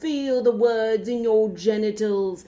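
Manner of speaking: put-on slow, loud, emphatic, drawn-out British accent. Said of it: "he would say things like".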